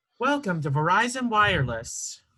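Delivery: put-on automated phone voice. Showing a voice they could do, speaker uses Verizon Wireless automated voice. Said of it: "the your call has been forwarded to an automatic voice messaging system voice".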